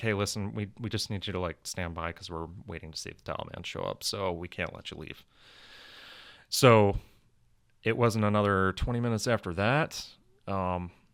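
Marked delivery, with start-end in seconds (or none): none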